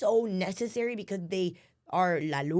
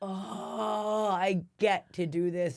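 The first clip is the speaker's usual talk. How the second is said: very slow, heaving sob with "oh" stretched long. Retelling a moment in the tub: imitating own heaving cry. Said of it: "a heaving cry of".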